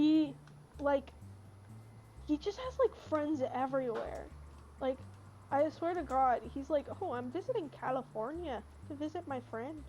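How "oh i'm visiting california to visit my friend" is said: put-on casual, plain Midwestern accent. Quoting the speaker's uncle, who has friends everywhere, in a Midwestern accent. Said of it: "he's got a Midwestern accent".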